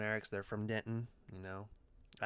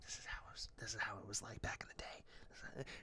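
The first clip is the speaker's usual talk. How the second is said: soft, breathy whisper under the breath; 9 dB quieter than usual. Retelling what was said during a film to a companion: retelling own whisper. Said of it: "And I'm just whispering".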